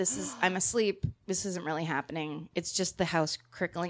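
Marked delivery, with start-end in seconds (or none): none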